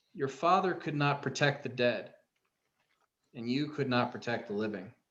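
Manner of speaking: thoroughly disappointed, let-down delivery. Voicing a slain elven man who speaks down to a player: disappointed. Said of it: "with this similar look of disappointment and says".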